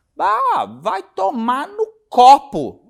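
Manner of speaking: mock stern tone, high, loud and slow.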